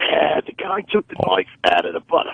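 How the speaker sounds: swooping, sing-song musing with widely wandering pitch. Retelling a scene where Columbo arrives and speaks, Peter Falk as Columbo. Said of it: "That was a darn good Peter Falk".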